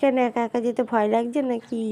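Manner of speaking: normal talking voice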